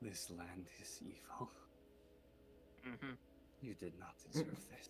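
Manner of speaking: whispering. Character kneeling beside a companion, hand on their back: whispering. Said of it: "and I just whisper".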